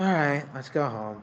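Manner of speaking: big, loud, beaten, giving-up voice. In a role-play, one character speaks to another in a big defeated voice. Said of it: "in a big defeated voice".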